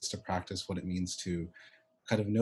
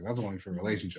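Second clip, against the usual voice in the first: murmured in a hushed voice. Retelling how a client felt touch was only for relationships: imitating a hushed voice. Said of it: "in a hushed voice".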